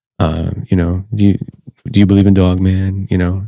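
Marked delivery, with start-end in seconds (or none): 1.2-3.1 meek, modest, humble, unassuming tone. Retelling how a man who humbly came in spoke: imitating a very quiet talker. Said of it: "very quiet, talks like this".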